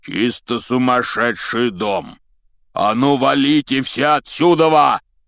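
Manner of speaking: dramatic emphatic outburst. A newcomer arrives to stop a brawl in a bookshop, booming. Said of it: "громыхнул чей-то голос".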